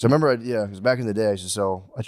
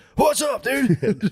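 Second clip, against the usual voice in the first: very high-pitched delivery with a strong cadence; 4 dB louder than usual. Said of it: "the cadence he talks".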